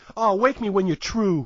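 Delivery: put-on heavy New York accent, tough-guy voice. Retelling a kid's line from a film scene, in a strong New York accent. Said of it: "the strong New York accent".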